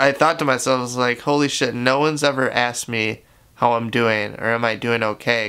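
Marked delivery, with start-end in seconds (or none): none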